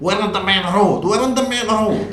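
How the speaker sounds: high, loud, protesting Scottish woman's voice.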